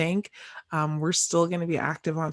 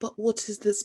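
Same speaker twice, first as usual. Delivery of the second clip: put-on British accent, pitched up; 5 semitones higher than usual. Podcast host tries saying the word in a british accent, attempting a british accent. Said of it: "I can't say what in a, a British accent".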